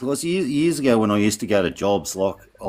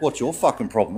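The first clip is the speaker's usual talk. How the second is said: mock, snappy, attitude-laden delivery. Retelling a mate's reply on the phone: imitating someone giving full attitude. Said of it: "give me full attitude on the phone".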